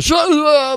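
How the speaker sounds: put-on very high, drunk-sounding chorus of voices. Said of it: "drunk chorus says".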